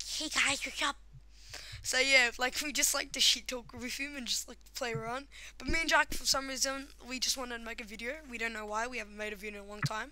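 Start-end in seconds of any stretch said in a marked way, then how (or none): 0.1-1.0 casual, friendly, relaxed delivery. Retelling how a friend opens his video, imitating Mateo. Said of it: "He's like".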